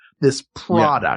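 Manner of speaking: sarcastic, mocking scare-quote emphasis. Scoffing at a bag-resealing gadget's promise: mocking air-quote tone. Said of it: "You can hear the air quotes I'm using".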